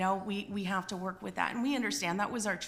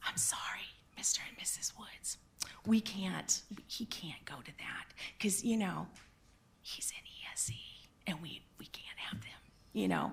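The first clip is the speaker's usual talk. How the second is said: mock whisper, quieter and lower; 2 semitones lower, 6 dB quieter than usual. Parent retells what the school department said, imitating someone whispering.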